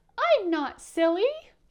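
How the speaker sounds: tiny, whiny voice, high-pitched and loud. Storyteller showing listeners how to say the little dot's line, in a tiny whiny voice. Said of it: "Can you do that?".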